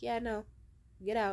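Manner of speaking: ordinary talk, nothing marked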